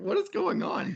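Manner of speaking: strained, squealing bewildered cry.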